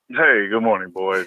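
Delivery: morning radio announcer delivery. Greeting the boys good morning, dj radio voice. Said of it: "you got your D J radio voice?".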